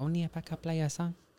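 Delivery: put-on soft, clumsy Guatemalan accent. Quoting a woman they convinced to come, bad Guatemalan accent. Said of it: "My bad Guatemalan accent".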